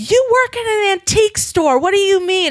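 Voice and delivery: incredulous and angry.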